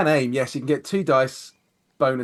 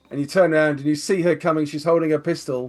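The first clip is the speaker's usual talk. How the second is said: ordinary talk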